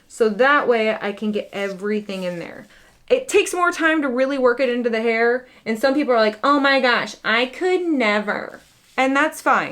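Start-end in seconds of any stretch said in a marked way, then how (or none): 6.4-8.6 put-on snooty disdain in a slow, snotty drawl. Mimicking what some people say about her hair routine: mock-snotty voice. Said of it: "I did that really snotty voice".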